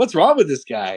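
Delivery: normal talking voice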